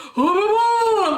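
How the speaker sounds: put-on shrill, very high, loud, drawn-out old man's hollering. Retelling an old man on the ward hollering: imitating an old man hollering loudly. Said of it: "he'd holler so loud".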